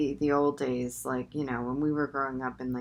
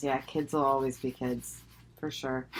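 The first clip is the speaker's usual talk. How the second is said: plain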